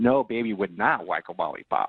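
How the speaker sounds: put-on baby talk dropped very low in pitch. Retelling how she responded to him, imitating baby talk. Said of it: "more baby talk".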